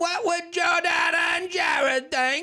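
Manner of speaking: put-on British accent. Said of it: "speak like they're in the Mary Poppins era".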